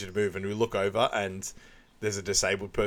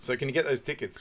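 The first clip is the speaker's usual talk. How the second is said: ordinary delivery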